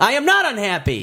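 high-pitched, heated yell. Denying being unhappy during an acted quarrel over streaming: yelling. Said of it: "You're yelling".

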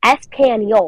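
mock Spanish with heavy American pronunciation. Imitating a classmate saying one Spanish word: imitating an Americanized Spanish accent. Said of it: "she has a very Americanized accent".

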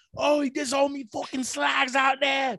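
put-on thick, laid-on Brummie accent, very high, slow. Mocking how a fighter talks: exaggerated imitation of her accent. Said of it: "that accent is already really unattractive. But then to lay into it".

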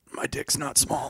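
mimicked gasped words. Retelling a man barely waking up: imitating a gasp. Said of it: "just barely manages to gasp out".

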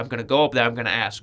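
ordinary talk

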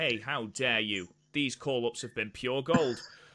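put-on, mock sarcastic tone. Replying to another speaker's complaint about call-up storylines: put-on sarcastic tone. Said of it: "he says sarcastically".

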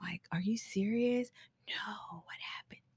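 very quiet, breathy, hushed whisper. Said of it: "if I talk in a whisper".

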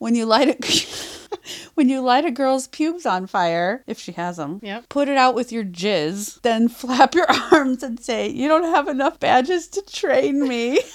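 giggling, laughing, high-pitched and loud. Reading a definition aloud to the other speaker, laughing while reading. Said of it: "I don't know if I could read this without laughing".

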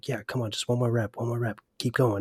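mimicked whisper. Retelling what a guy said during the speaker's reps, imitating a whisper. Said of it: "you can hear him, like, whispering".

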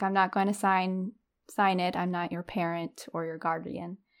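normal talking voice

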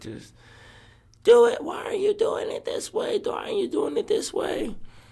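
mock, put-on screaming. Describing a mom at basketball screaming at a kid; imitating a screaming mom. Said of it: "she's screaming at a kid".

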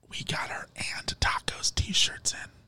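soft, hushed whisper.

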